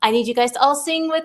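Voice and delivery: mock excited, eager, excitable voice. Retelling starting the morning reads and calendar time: imitating own excitable voice. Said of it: "I was just a little bit more excitable".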